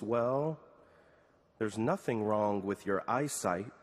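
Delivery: imitated soft, pensive voice. Retelling a husband's answer to his wife, imitating a soft, thoughtful voice. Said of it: "said in a soft, thoughtful voice".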